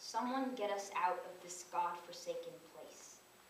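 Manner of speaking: plain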